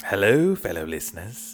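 creepy horror-host voice. Podcast co-host greeting listeners during the show intro, Crypt Keeper-type creepy voice. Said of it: "He's being creepy".

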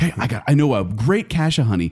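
ordinary talk

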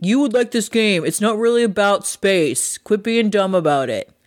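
pushy, insistent, going-on-and-on nagging voice. Retelling how a friend urges her to play a game: Chris impression. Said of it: "That's my Chris impression".

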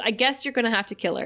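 ordinary talk

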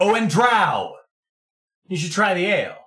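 very loud, high-pitched call-out. Game master voicing a character calling after a departing drow, very loud. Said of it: "he very loudly is just".

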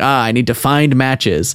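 normal talking voice

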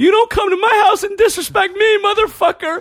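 super high-pitched, tearful, crying scream. Retelling a fight where he was on top of a guy, imitating his super high-pitched voice. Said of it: "my voice was like super high pitched".

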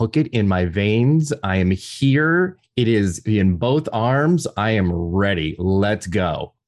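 normal talking voice

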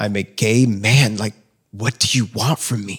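crying, pleading, screaming through tears. Retelling a prayer to the Lord: retelling screaming and crying. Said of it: "screaming and crying to the Lord".

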